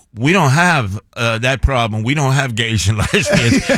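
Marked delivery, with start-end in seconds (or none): none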